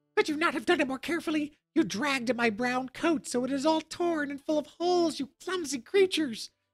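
very high, shrill, piercing outcry. Recovered from his fright, the dwarf cries out at the girls: shrill cry. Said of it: "he cried with his shrill voice".

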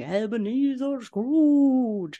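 high, drawn-out, ghost-like howl. Retelling a cartoon scene, a ghost calling through the door: imitating Jacob Marley howling. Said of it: "Jacob Marley's voice howling".

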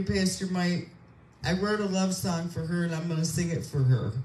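ordinary delivery

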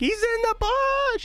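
put-on squealing yell, panicked. Retelling a panicked callout to a teammate: imitating own squealing yell. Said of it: "you had me squealing, like, yelling".

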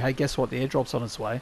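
ordinary talk

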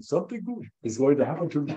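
sweet, cute, little put-on Indian accent. Repeating a phrase all evening long: cute indian accent. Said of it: "with this cute Indian accent".

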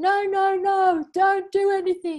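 high, loud sobbing and screaming wail. At the dentist, a teenage girl in the next room; imitating girl crying and screaming. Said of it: "crying and screaming".

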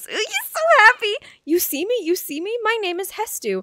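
very high-pitched game-character voice. Speaker voicing a game character's lines, Hestu voice.

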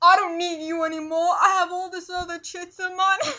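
brash, swaggering, street-tough gangster talk. Acting out how someone might dump a partner, acting like a little gangster. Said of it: "I'm trying to be a little gangster".

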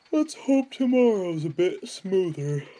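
speaking through a yawn. Crawling home late at night, the driver speaks, yawning. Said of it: "yawned the driver".

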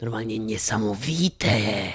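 slow, whispered, weird and strange changed voice.

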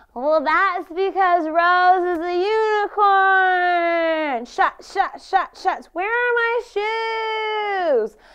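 put-on acted drunk voice. Retelling a drunk friend's reply to a man's comment, imitating a tipsy friend. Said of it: "(TIPSY VOICE)".

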